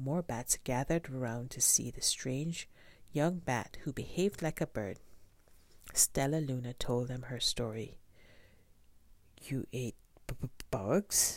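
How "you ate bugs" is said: stuttering, slower. A bat in the gathered crowd reacts to the young bat's story, stuttering. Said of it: "stuttered one".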